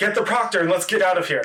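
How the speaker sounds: high dwarf-style voice, calling out. A game narrator voices the dwarf during a guild test; dwarf yelling. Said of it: "The dwarf yells".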